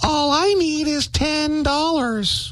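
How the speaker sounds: tiny voice. Telling a joke, the doctor listens to the patient's knee and hears a little voice. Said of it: "hears a little voice".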